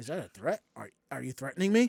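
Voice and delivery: very low, hushed, quiet delivery. Retelling confronting a supervisor who threatened to fight them; Scooby-Doo movie line delivery. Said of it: "live action Scooby Doo".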